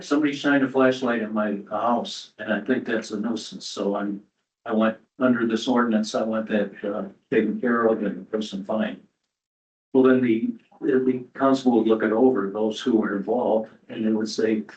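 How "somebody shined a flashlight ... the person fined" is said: ordinary delivery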